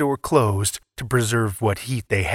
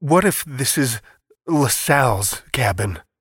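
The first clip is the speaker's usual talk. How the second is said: halting, stuttering stammer. In life-threatening cold, an apprehensive man speaks, stuttering. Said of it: "He stuttered".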